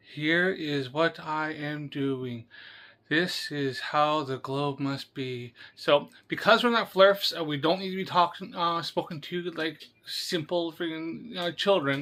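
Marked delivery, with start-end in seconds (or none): 0.2-5.5 very slow, deliberate, painfully drawn out, word by word. Imitating a video maker who talks slowly: super slow Eric Dubé voice. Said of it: "he talks super slow. He's like".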